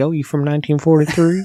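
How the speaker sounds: put-on Southern accent. Discussing the movie Carrie, imitating one actress's character: Nancy Allen impression, southern accent. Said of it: "she doesn't have a southern accent. I don't know why I'm making it sound like that".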